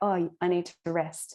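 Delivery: plain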